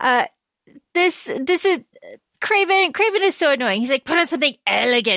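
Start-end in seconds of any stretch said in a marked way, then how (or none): 4.0-5.2 put-on Scottish accent. Quoting a film character giving an order: Craven's Scottish accent. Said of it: "he's Scottish, by the way".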